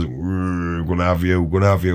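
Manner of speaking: hard, threatening tough horse voice, drawn-out mm. Voicing a big tough horse at the fence: voicing a tough horse. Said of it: "a big hard fucker that goes".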